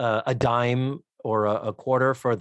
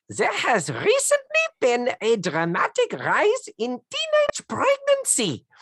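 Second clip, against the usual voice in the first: very high voice swooping in pitch; 13 semitones higher than usual. Retelling a radio voice from an episode: Doctor Ruth impression. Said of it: "Spot on, Doctor Ruth".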